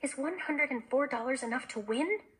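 plain reading voice

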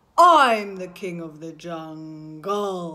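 deep, loud, low lion voice. Leading a group in walking and roaring like a lion, in a deep lion voice. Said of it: "our lion's voice is a little bit deep".

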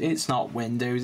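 ordinary delivery

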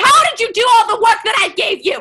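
put-on furious shout at full blast, very loud and high. Retelling how the old woman finds all the corn cleaned, retelling an angry yell. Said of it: "She gets really mad and yells".

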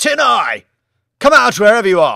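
yelling with everything, top of voice, high, loud. Reading a story where a character calls across the bar: shouting at the top of his voice. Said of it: "shouted at the top of his voice".

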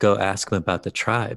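ordinary talk, nothing marked

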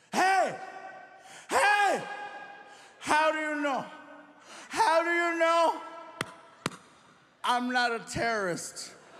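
put-on play-acted drunk indignation. Retelling confronting the security officer while drunk: imitating drunk offended self. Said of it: "Drunk me was offended".

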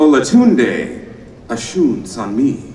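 said slowly with careful pronunciation. A host welcoming a panelist, saying the name slowly to say it correctly. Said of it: "I said it slow".

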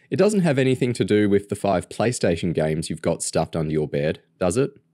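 ordinary talk

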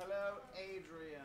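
booming, very loud, high voice. Saying hello to Adrian, then noticing it: loud. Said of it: "Boy, I'm loud".

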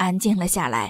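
ordinary delivery

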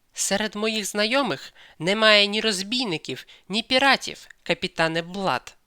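curt, cutting angry retort. A woman, angered by his irony, retorts to the captain, snapping angrily. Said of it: "відрубала вона".

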